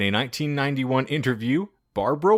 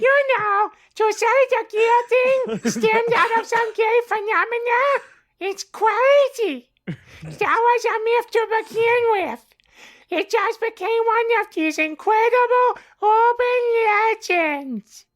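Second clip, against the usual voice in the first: very high, squeaky puppet voice; 4 dB louder than usual. Reading a quoted statement aloud in Elmo's voice. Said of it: "I'm Elmo, not [name]".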